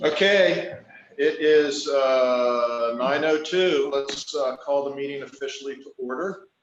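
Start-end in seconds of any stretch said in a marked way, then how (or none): 0.0-3.9 loud, high, projecting teacher voice. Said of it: "I'll just use my teacher voice".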